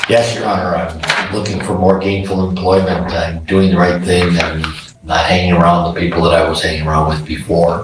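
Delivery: plain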